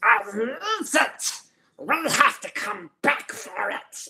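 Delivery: slow squishy monster voice. Showing off the range of character voices: Gollum-type monster voice. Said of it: "your Gollum type monster".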